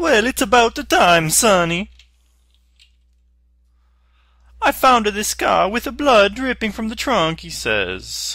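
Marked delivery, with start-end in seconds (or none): 0.0-7.5 put-on thick Italian accent, shrill, booming, loud, high. Retelling what an officer says in a recording, Officer Giuseppe's heavy Italian accent. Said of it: "in his heavy Italian accent".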